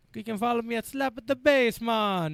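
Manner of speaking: accent that comes out Italian-sounding. Telling listeners where to follow him, in an Italian-sounding accent. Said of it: "you sounded Italian".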